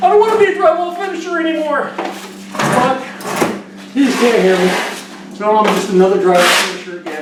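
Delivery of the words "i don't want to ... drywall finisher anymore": high, fast pleading mock yell. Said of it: "So that's my common thing".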